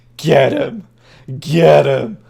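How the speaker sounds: very slow, loud, swooping, drawn-out cheering. Voicing a figure cheering on the hags in a fight: cheering on. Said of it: "Fenn's there cheering on the hags".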